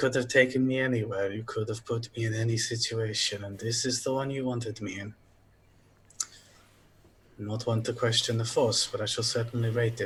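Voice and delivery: muttering under the breath. Playing a character leaving after a polite bow, the player mutters: muttering under breath. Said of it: "I say under my breath".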